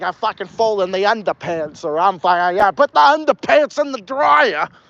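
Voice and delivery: put-on strong northern New England accent. Imitating how the speaker's grandparents say things, in their northern accent. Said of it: "my grandparents really got the accent".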